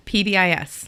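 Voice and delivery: letters rattled off very fast. Introducing own job title acronym, letters rattled off very fast. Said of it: "I just like to say it really fast".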